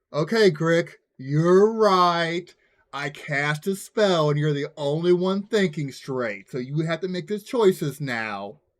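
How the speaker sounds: very slow, mocking, sarcastic tone. Speaking in character to a goblin through a translator: sarcastic. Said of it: "kinda sarcastically".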